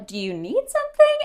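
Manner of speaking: high, puzzled drive-thru worker voice.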